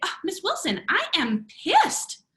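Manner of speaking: chirpy, very high, bright, cheerful tone. Retelling what Sam might say to Miss Wilson, imitating Sam's happy tone. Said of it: "your voice, your expression is not showing me that you're mad".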